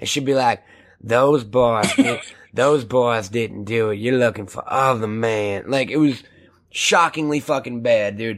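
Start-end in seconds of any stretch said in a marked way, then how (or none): 1.0-5.7 weird, badly acted, low, dreamy southern accent. Mocking an actress's performance in a movie: weird dreamy southern delivery. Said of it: "southern kind of accent, ... real weird dreamy delivery like this".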